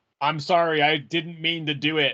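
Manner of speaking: usual speaking voice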